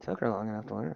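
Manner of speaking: muttering quietly. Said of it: "Mumble to myself".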